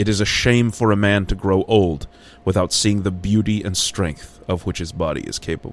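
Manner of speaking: ordinary delivery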